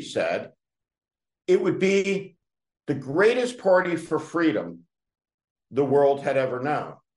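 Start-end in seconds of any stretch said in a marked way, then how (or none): none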